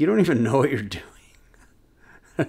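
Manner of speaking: put-on snide, mean, taunting tone. Retelling own taunt at an opponent in a game: imitating own mean taunt. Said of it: "I'm so mean".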